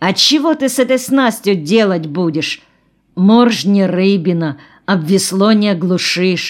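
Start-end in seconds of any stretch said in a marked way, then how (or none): none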